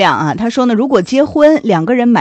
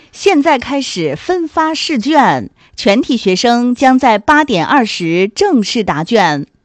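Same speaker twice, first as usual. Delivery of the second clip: formal, slightly affected newsreader broadcast voice. Asked to use their announcer voice, the speaker tries a broadcast announcer voice. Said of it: "用你的播音腔播啊".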